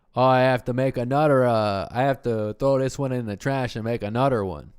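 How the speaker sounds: exaggerated Canadian accent. Imitating a very Canadian man from a show, in a super Canadian accent. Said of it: "that's a good accent".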